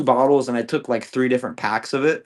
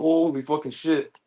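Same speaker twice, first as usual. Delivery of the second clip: acted, freaked-out, panicked, alarmed voice; 3 semitones higher, 4 dB quieter than usual. Recounting tackling a woman he found in his house, the speaker retells a panicked exclamation. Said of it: "I was freaking the fuck out".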